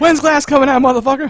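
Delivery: high-pitched, loud mock yell.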